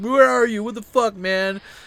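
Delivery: high, loud freaking-out yell. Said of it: "his friend just blew up his phone".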